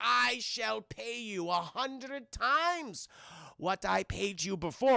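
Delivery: put-on German accent. Retelling a scene from a story, stereotypical evil German Nazi scientist voice. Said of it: "Very stereotypical evil German Nazi scientist".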